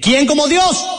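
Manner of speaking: group shouting.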